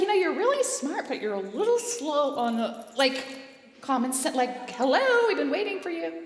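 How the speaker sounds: animated, high, loud, swooping mother voice. Retelling what a mother used to say: imitating mother. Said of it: "She's like".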